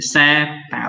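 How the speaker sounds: seter said with stress on first syllable se. Explaining word stress with an example word: seter, stress on first syllable se. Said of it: "ditekankan di awalnya".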